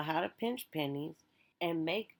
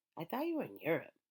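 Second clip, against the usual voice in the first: put-on, utterly baffled, very confused, puzzled tone. Retelling the sister's reaction after the speaker listed the countries; acting out confusion. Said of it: "said with a very confused voice".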